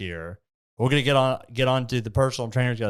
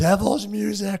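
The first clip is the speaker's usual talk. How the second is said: put-on scream, higher; 9 semitones higher than usual. Retelling how a lady in the gym reacted: imitating a woman screaming. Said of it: "starts screaming".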